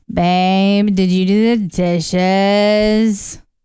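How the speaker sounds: very slow, whiny, flat, drawn-out monotone. Imitating how he sounds when asking her things: whiny, slightly monotone voice. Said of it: "a really whiny voice. Whiny, but also a little bit monotone".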